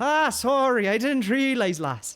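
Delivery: put-on slow, drawling Irish accent. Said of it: "The character Oxy in the game gets the Irish accent".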